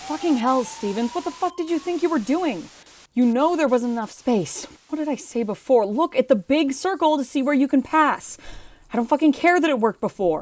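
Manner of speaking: high-pitched, furious, angry yelling. Scolding a pilot for a risky pass: yelling. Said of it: "don't yell for a second".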